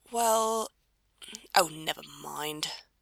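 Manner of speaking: muttered, mumbled under the breath. Reading a novel, the narrator voices a character muttering a reply. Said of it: "Crowley muttered".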